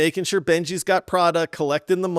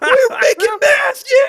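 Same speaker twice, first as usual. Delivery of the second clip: mock shouting, higher and louder; 8 dB louder than usual. Retelling what was shouted while playing Schedule One: imitating own shouting. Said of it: "to just be shouting and being like".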